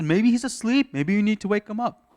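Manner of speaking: very high, loud, jeering, goading taunt. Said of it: "goading them".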